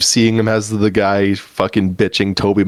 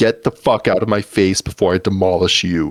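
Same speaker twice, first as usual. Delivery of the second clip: mock anger, said coolly with calm, controlled fury. Retelling a movie character's threat after he chews out a kid, mock calm anger. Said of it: "he said it so angrily but so calmly".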